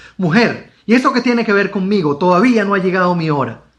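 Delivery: negative, refusing intonation. Reading Jesus's reply to his mother with a negative, refusing intonation. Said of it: "Vamos a ponerle ese sentido negativo incluso en la entonación".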